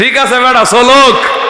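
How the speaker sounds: rousing, stirring call.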